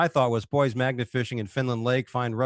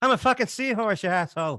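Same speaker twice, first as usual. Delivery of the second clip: pitched-up Irish accent throughout; 8 semitones higher than usual. Joking about a lost seahorse searching for land: Irish accent. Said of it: "I'm liking the Irish accent".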